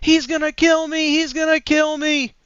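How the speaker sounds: mock frantic, panicked scream, very high. Retelling a woman hanging onto an eighteen-wheeler, acting out her panicked screaming. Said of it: "she starts screaming".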